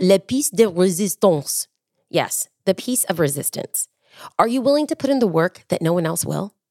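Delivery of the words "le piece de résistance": put-on French accent. Quoting a french phrase in a motivational talk, put-on french accent. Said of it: "I will put on my French accent".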